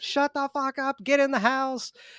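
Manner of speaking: put-on very high, shrill screaming. Retelling a movie scene where a mother screams at her son: imitating someone screaming. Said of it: "screaming at him".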